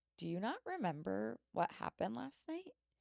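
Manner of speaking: frightened, terrified, alarmed voice. Retelling what a man asked them in the church hall, imitating a terrified voice. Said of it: "he looks at me terrified and he goes".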